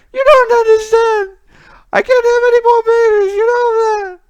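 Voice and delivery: very high, very loud, anguished, grieving cry. Describing a scene where a man consoles a woman, imitating a grieving woman. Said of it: "she's very grieving".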